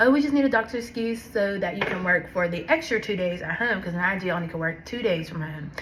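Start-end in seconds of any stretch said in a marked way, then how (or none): none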